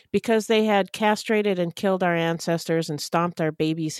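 ordinary delivery

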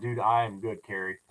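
ordinary delivery

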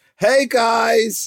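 very high strained voice, "guys" stretched out. Opening the show with a greeting to listeners, strained voice. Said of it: "You sound so strained".

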